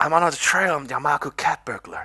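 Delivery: hushed, secretive, confidential whisper. Reading a story aloud, a character confiding a secret: confidential whisper. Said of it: "lowers her voice in a confidential whisper".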